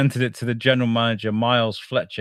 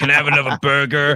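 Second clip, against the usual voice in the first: put-on everyday American accent; 4 semitones higher, 3 dB louder than usual. Joking about a Russian version, imitating an American: imitating an American. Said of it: "it'd just be all Americans like".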